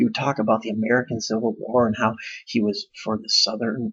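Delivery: plain reading voice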